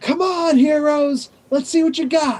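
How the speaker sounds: very high, loud hollering yell. Game master voicing Blacklash, yelling at the distant heroes: Blacklash yelling. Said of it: "he just starts yelling".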